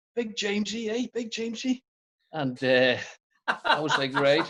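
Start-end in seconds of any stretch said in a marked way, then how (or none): 0.1-1.8 put-on English accent, very high pitch. Speaker retells Dolan singling him out after training: attempted English accent as Dolan. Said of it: "I'm trying to do an English accent".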